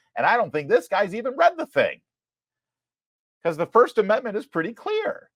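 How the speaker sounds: very high voice breaking with emotion. Speaker criticizes a federal employee over the First Amendment, voice cracking with emotion. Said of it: "Why is my voice cracking?".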